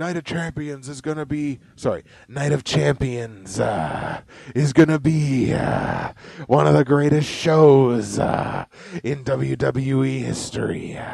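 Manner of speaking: stumbling, big-show wrestling announcer style hype. Retelling what was announced at the start of the night, as a Triple H impression. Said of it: "That's my Trips impression".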